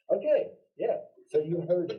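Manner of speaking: high, loud, excited burst. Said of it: "I got excited".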